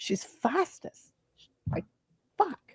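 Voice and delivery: hushed, high whisper under the breath. Speaking in a conversation with others, whispering. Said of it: "why am I whispering?".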